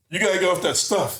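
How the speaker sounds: put-on drunk man voice, slurred words. Retelling a stranger's advice at the turnstile: imitating a drunk man. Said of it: "but he's drunk, so he's, like, stumbling".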